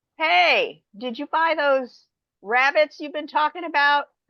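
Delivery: high hollering yell. Speaker retells calling out across the backyard to the farmer: retelling a yell. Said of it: "And I'm like yelling to Charles".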